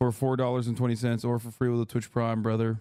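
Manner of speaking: ordinary talk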